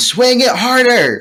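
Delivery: very high, very loud bellowed yell. Recalling what Mr. P shouted during practice, imitating Mr. P yelling. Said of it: "just yelling".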